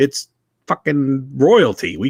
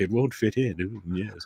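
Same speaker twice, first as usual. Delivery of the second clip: put-on posh British accent, lower and quieter; 6 semitones lower, 10 dB quieter than usual. Imitating an upper-class british person: bad upper-class english accent. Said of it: "I can't do an English accent".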